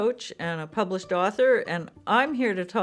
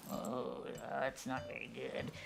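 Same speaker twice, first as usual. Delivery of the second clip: very quiet, critical inner-critic murmur; 7 semitones lower, 17 dB quieter than usual. Voicing the inner critic's comment on the videos, mock inner-critic voice. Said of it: "[critical voice]".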